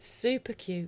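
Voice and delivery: chuckling while talking. Telling the other speaker they are cute: chuckling while talking. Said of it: "but you're chuckling".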